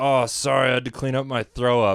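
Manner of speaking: normal talking voice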